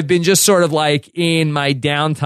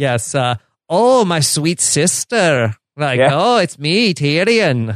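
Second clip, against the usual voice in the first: put-on little leprechaun voice. Talking about Tyrion's voice with the others, doing Tyrion like a little leprechaun. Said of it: "i sound like a little leprechaun".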